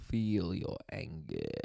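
very deep, creaky, Russian-tinged voice. Describing a comedian's one stand-up impression, do a Russian Emperor Palpatine impression. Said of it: "can almost do a Russian Emperor Palpatine from Star Wars".

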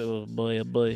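slow, drawn-out cartoon voice, oh boy stretched out. Reacting to news about the studio, sounding like Homer Simpson. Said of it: "that sounded like Homer".

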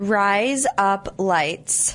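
Australian accent makes rise up lights sound like razor blades. Repeating a phrase for a coworker: saying razor blades in australian accent. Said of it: "razor blades with an Australian accent".

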